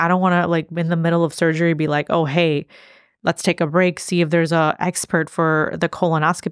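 ordinary talk

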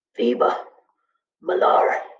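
wheezing voice. Narrator reads Timothy's answer when asked if he is all right, wheezing. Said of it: "He wheezed back".

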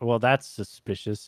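ordinary delivery

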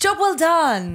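put-on British accent. Repeating a phrase after another speaker: imitating a British accent. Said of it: "in British".

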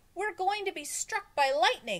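shrill, very high-pitched, loud yell. Todd, on a roof with others during a storm, shouted. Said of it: "shouted Todd".

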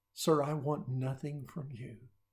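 put-on whisper. Retelling how a bum asks a rich man a favor: retelling a whisper. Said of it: "and he whispers to him".

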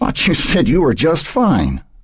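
mocking, sarcastic, sardonic, with swooping pitch. A newspaper publisher needles Bill after his drive goes wrong; sardonic. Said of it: "said sardonically".

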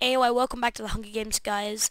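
ordinary talk, nothing marked

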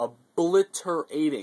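obliterating stressed, slow and hammered. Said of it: "I cannot emphasize that word enough".

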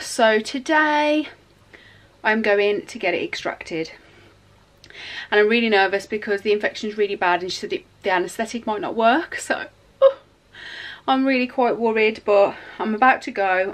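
breathless, panting. Speaker greeting viewers right after running up the stairs, out of breath. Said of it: "I'm really out of breath because I just run up the stairs".

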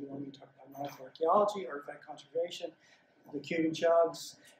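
ordinary talk, nothing marked

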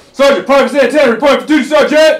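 shouting. A veteran disguised as a brand-new soldier reports to his sergeant, yelling. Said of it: "You don't have to yell".

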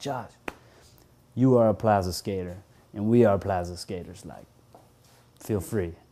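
heavily non-native, very broken English. Retelling how a skater welcomed him to skate the Plaza, imitating Raul's broken English. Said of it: "he says in some super broken English".

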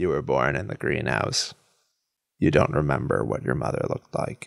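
creepy, low, deep, eerie synthetic electronic phone voice. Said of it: "a creepy voice on the phone that's very, like, electronic sounding".

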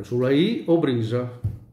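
ordinary talk

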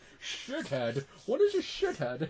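put-on swooping, animated film-star voice, wide pitch swings. Retelling a movie scene, quoting the hero: Sean Connery impression. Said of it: "And Sean Connery's like".

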